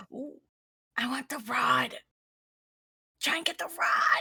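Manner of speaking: loud theatrical whisper. A player stage-whispering into another player's ear during a wager, whisper-yelling. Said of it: "I'm like whisper yelling".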